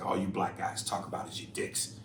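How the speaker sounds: usual speaking voice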